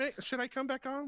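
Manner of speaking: very high-pitched voice. Retelling how the listener answered being told to rest: imitating the listener. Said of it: "I like your impression of me".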